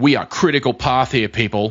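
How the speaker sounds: dry, mocking, lightly sarcastic delivery. Imitating people who overuse a buzzword, in a sarcastic tone. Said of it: "a little tone of sarcasm".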